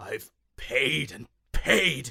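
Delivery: growling in anger. Narrator reading Daedalus's answer after being told he must pay, growling. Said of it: "Daedalus growled".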